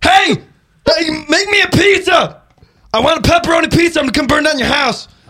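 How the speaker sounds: very high, disguised put-on voice. Answering a suggestion to prank call with that voice: put-on prank call voice. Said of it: "you should prank call with that voice".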